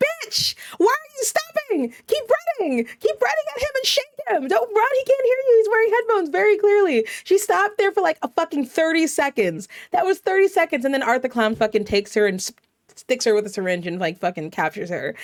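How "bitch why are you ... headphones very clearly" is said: put-on, very high-pitched screaming. Recounting yelling at a character on tv, retelling screaming at the tv. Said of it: "I'm sitting here screaming at the TV".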